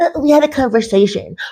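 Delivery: mock snide, belittling, sarcastic tone. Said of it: "Were you doing your taxes, you asshole?".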